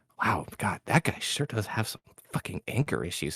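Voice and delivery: grumbled, mumbling under the breath. Storyteller voicing Fachus as he walks in, Fachus mumbling under his breath. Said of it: "just mumbling under his breath".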